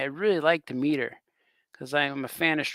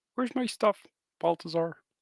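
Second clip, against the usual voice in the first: put-on cartoon frog puppet voice; 2 semitones higher than usual. Doing their own version of the voice, a Kermit the Frog voice. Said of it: "That's my Kermit the Frog".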